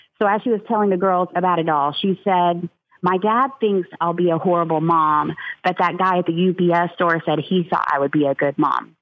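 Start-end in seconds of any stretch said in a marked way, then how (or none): none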